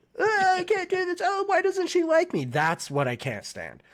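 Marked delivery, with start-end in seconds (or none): 0.2-2.4 very high, whiny, wailing scream. Fan complains about a character in a fight scene, imitating Zenitsu's whiny screaming. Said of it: "just screaming like".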